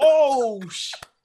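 high, loud, shocked cry.

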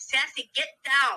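firm, scolding call, yelling. Retelling how everyone yells at the dog on the table: imitating people yelling. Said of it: "everybody yelling".

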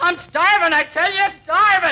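agitated, worked-up, high-pitched, desperate insistent tone. A lost prospector is welcomed in by a stranger, agitated. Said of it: "Be calm, old-timer".

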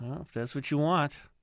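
sighing, resigned delivery giving in.

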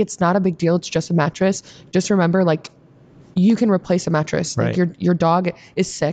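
ordinary delivery

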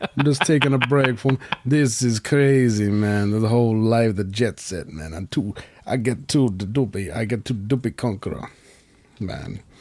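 put-on Jamaican accent. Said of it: "That's my [name] impression".

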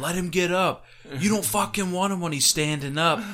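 mock screaming at top volume, high and yelled. Recounting yelling while people stared angrily at them, retelling own screaming. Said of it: "I was screaming".

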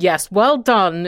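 sour, acidic, tart, disapproving tone. Remembering childhood, the speaker quotes Granny's reply in a retold acidic voice. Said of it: "in this kind of acidic voice".

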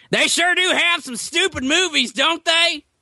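brash, loud, very high, shrill loudmouth voice. Recounting a woman at the movies after a trailer, imitating a loud woman. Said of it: "loud and i'm 12 seats away".

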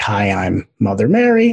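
play-acted, swooping, breezy, offhand, overly casual tone. Retelling how guides introduced themselves: imitating an overly casual greeting. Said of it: "it seemed so overly casual".

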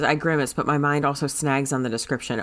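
ordinary delivery

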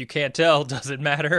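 loud, high-pitched shout. Recalling a character's reply, imitating William shouting back. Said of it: "William shouting back".

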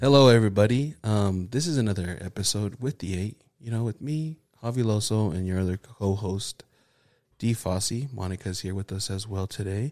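plain, unshowy intro read without announcer flair. Opening a show episode, introducing the co-host and a guest, too monotone. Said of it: "It's just too monotone".

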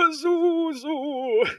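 very high, stretched-out, drawn-out desperate cry. Retelling a cartoon scene where a gargoyle comes in, imitating Farnsworth in desperation. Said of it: "in desperation and the fucking gargoyle comes in".

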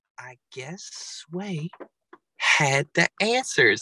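calm, serene zen tone, very slow. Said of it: "Then he sounded so zen".

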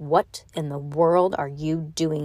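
frightening whisper. Narrator reading a man glaring down at the children, in a frightening whisper. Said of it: "spoke to them in a frightening whisper".

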